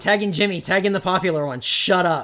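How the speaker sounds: ordinary talk, nothing marked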